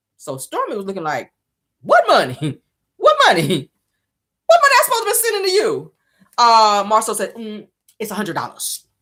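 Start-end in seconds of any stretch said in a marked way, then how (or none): 8.0-8.8 slipped out real quick, rushed and rattled off. Retelling how someone told a price, said real quick. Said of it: "He said it like that. He tried to say it real quick".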